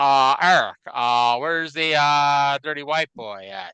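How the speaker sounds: unpolished, slow, hesitant put-on voice, pausing between words. Imagining a ringside spectator asking about a wrestler: Ted Turner impression. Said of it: "my Ted Turner impression needs work".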